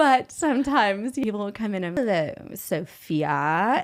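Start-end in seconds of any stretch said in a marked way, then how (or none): 2.0-3.8 haughty, snooty put-on British accent. Retelling greeting someone at the door, put-on British accent. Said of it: "it's British accents".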